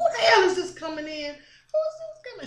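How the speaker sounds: play-acted pleasant yet bitchy tone, pitched very high. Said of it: "She said it pleasant, uh, in a pleasant way, but in a bitchy way".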